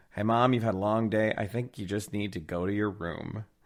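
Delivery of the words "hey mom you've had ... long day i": ordinary delivery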